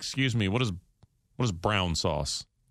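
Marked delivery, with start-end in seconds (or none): none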